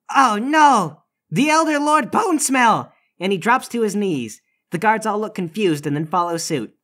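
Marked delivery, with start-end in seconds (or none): 0.1-2.9 very slow, high, drawn-out cry of alarm. Narrating a game scene, voicing a young lord who sees the elder lord; shouting. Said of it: "He shouts".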